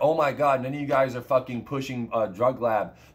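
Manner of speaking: ordinary talk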